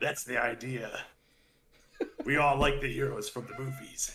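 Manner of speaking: dark, ominous hero voice with big pitch swoops. Told they talk ominously like in a movie, the speaker answers in a Batman voice. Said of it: "You're doing a Batman voice right now".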